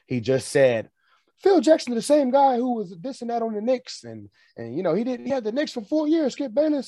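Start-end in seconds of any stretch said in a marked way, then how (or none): 1.3-6.9 imitated, put-on screaming, pitched higher. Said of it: "he was screaming at the top of his lungs saying".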